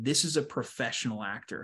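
normal talking voice

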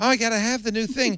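very high, eager, gushing millennial-type voice. Answering a question about booking millennials on the show: imitating a millennial. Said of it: "Why didn't you book some millennials".

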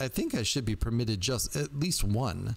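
ordinary delivery

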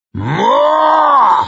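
roaring cry, very high, stretched long. Narrator reads a man's cry in the middle of a killing, bellowed. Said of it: "he bellowed".

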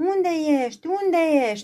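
high, loud, frightened shout. Reading a fairy tale, the beauty runs through the castle, shouting in fear. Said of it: "alerge strigând înfricoșată".

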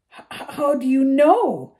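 flustered, spluttering. Reading a professor's startled reply after she drops her books, spluttering. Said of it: "She spluttered".

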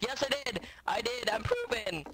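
high voice cracking on the words. Confirming a kill in the game, voice cracking. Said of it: "Voice crack".

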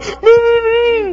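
put-on very high, sobbing toddler cry. Retelling a two-year-old who can't talk trying to tell his parent something: imitating a crying toddler. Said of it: "And he's crying".

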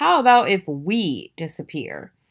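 ordinary talk

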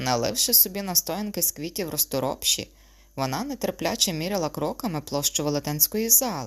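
ordinary delivery

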